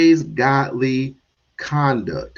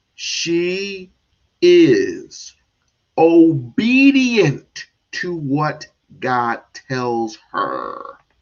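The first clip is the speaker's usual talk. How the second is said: very slow, deliberate, one word at a time. Reading a statement aloud to listeners as slowly as possible, very slow. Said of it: "I'm gonna read this as slow as I possibly can".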